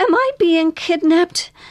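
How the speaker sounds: tiny, very high little voice. As a helicopter lifts off, a passenger speaks to her companion in a small voice. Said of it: "said Cardi in a small voice".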